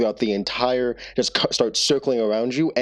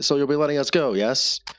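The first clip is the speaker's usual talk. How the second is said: sly, smug, knowing, self-satisfied tone; 3 semitones higher than usual. A narrator voices Joe looking up at the others and asking to be let go, Joe, smirking. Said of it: "a bit of a smirk on his face".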